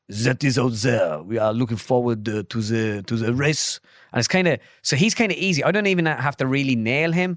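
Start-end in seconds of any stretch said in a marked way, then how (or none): 0.2-3.8 put-on caricatured, dramatic, theatrical French accent. Imitating a team principal's voice: dramatic French accent. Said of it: "Dramatic French accents".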